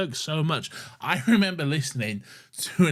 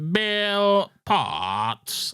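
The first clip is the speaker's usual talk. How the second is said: put-on cyborg voice, higher pitch; 7 semitones higher than usual. Imitating a character from the episode being discussed: classic Cyberman voice. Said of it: "The voice is horrific".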